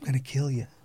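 imitated whisper, under the breath. Retelling a street fight, imitating the opponent whispering under his breath. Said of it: "he was whispering under his breath".

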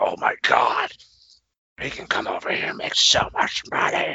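breathy half-whisper under the breath. Imagining a wrestling boss seeing a star wrestler: imitating Vince McMahon. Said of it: "that's my new impression of Vince".

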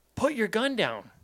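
high-pitched, urgent shouting. Retelling a hunting trip where a buddy orders a gunman: imitating someone yelling. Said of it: "his buddy yells".

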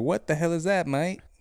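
bad London accent, slipping Australian. Imitating a London listener reacting to a mailed hat: bad London accent. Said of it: "Bad. Piss poor".

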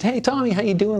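mock bright, cheerful tone. Retelling greeting a co-star at a restaurant, imitating own past greeting. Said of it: "Like that".

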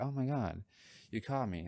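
mock-embarrassed, acted embarrassment. Speaker acts out being caught with something, acting embarrassed.

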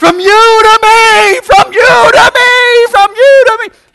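very loud, very high, slow, drawn-out desperate scream. Retelling how a man at a service grabbed and bear-hugged him: imitating a man screaming. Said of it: "He started screaming".

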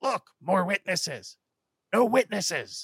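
high, loud monster battle yell. A game master voices a Broadkill pointing at the players; monster shouting. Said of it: "shouts out as it points to you".

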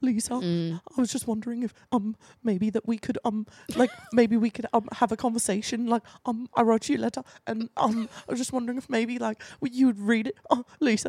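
put-on trembling, shaky voice. Retelling how James asked Lisa for a conversation, imitating his shaky voice. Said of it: "His like voice is shaking".

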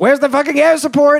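high, rushed, over-the-top battlefield yell. Describing a film, speaker acts out a character's line, retelling a yell. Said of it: "And then he yells".

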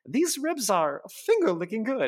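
very high put-on voice with big pitch swoops. Retelling how George quotes a line: Julia Child impression. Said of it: "does a good Julia Child impression".

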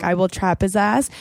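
plain

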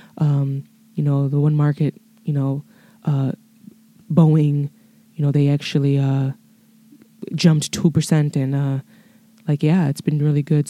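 boring, low-energy, flat monotone delivery. Trying to fake a finance news report, it comes out flat, monotone. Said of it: "it was just very monotone, very boring sounding".

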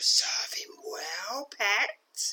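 hideous, ugly whispered creature voice. A voice calls from a dark wood as a spider scuttles toward you, hideous voice. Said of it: "issues a hideous voice from dark wood".

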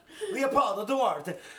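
loud, very high Italian accent. Saying a winner's name aloud, with an Italian accent. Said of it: "So I say it like I'm an Italian".

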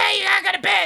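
shrill, very high, loud shouting. Retelling a late-night scene, the mother yelling: imitating mom yelling. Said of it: "yelling at me".

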